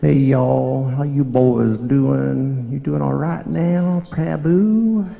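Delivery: put-on cheery, jolly American Southern accent. Act out how Vishal would always greet you when you met, in his American Southern accent. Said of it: "greet me with the accent that the Southern people speak".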